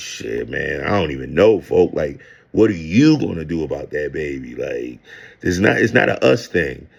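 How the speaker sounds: careless, uncaring, rude, dismissive brush-off. Retelling an answer on a three-way phone call: imitating own rude reply. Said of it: "I was being an asshole".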